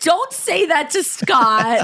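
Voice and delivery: mock protective, defensive, high, slow reproachful tone. Retelling what a friend said about scott: imitating a defensive friend. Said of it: "she was so defensive of you".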